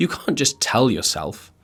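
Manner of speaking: voice cracking partway through the word "can't". Mid-explanation to listeners, the speaker's voice suddenly cracks. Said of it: "my voice is breaking".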